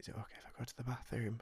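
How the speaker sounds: soft, hushed whisper. Recalling a woman from the office coming up to ask, imitating her whisper. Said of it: "like whispered and was like".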